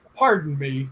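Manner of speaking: mock angry, annoyed-sounding delivery. Retelling an unseen man speaking in his ear: imitating a man sounding mad. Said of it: "like he's mad".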